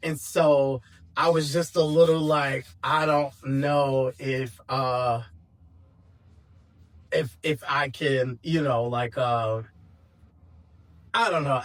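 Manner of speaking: choked up, voice breaking, words catching. Speaker telling a personal story, getting choked up. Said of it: "I'm getting choked up".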